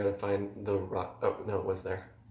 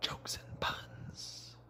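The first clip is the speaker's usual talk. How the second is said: soft whisper under the breath. Introducing the Jokes and Puns Corner segment, whispering.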